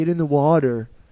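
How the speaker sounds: put-on California surfer accent. Picturing how surfers from California talk, the speaker imitates one: California surfer accent. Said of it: "picture like surfers from California being like".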